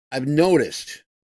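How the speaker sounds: ordinary talk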